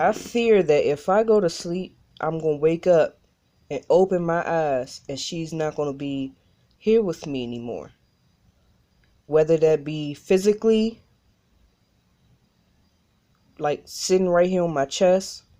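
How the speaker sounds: talking while fighting back tears. Explaining why sleeping feels frightening, fighting back tears. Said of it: "I'm trying not to get emotional".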